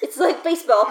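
plain

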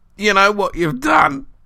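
painful gurgling, very high and loud. Narrator reads a thrashing creature's words to Arthur: gurgling painfully. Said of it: "he gurgled painfully".

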